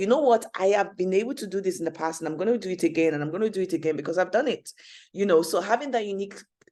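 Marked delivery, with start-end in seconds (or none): none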